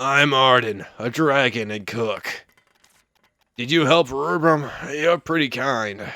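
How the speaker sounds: low gruff dragon voice. Voicing the dragon cook greeting the apprentice witch: low gruffy Arden voice. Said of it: "A low gruffy voice?".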